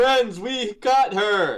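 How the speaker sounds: very loud, shrill, high-pitched yelling. Calling out to friends in the game that she is caught: yelling. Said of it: "I yell".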